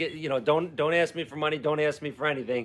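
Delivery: normal talking voice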